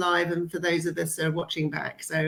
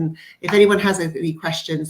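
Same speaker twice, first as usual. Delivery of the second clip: ordinary talk, nothing marked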